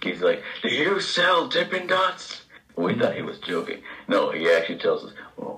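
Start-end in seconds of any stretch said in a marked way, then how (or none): 0.6-2.4 near-yell, very loud, very high, slow, drawn out. Retelling what he went and asked, very loudly, like an idiot; acting out a very loud question. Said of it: "but very loudly".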